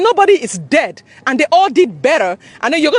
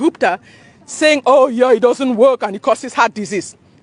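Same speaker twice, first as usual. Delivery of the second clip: plain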